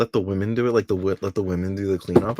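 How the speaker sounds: normal talking voice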